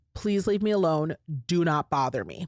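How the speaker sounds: said with firmness. Speaker demonstrating how to tell someone to leave you alone, very firm. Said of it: "And you say it very firmly".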